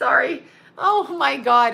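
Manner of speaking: cracking up mid-sentence, laughing through the words. Breaking off mid-explanation after reading something funny, laughing while talking. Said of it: "I am fucking cracking up".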